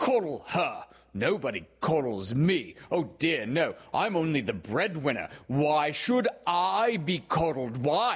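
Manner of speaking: full-throated high shouting. Reading a story, a father complains to his family at home; shouted. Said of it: "he shouted".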